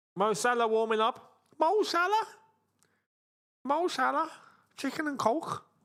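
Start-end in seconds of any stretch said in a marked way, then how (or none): 1.6-5.6 poor, bad Liverpool Scouse accent, high and slow. Joking about a player warming up: poor attempt at Scouse accent. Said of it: "my poor attempt of Scouse".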